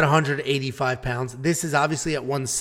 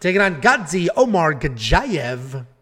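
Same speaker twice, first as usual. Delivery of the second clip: put-on radio announcer voice, broadcaster style. Announcing who someone is taking on, in a radio announcer voice. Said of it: "See, with the radio voice and everything".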